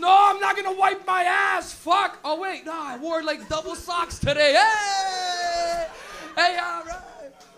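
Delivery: put-on drunk voice, very slow, loud and high-pitched. Acting out someone in a club: imitating a drunk, high clubgoer. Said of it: "You're gonna be in a club all drunk, all high on M D M A".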